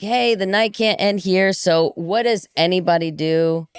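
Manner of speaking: plain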